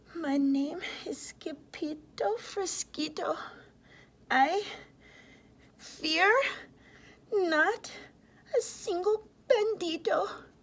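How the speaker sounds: very soft, hushed, very high, slow, drawn out. Narrator reading a story; with legs shaking, the sword fighter gives his name: very soft voice. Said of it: "in a muy, muy soft voice he said".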